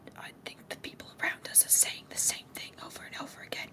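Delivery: whispering in character voice. Whispering to a companion in character during the game: whispering in character. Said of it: "gonna whisper in Reuven's ear".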